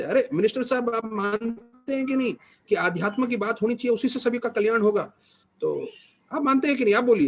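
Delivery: high, loud, projected public-address voice.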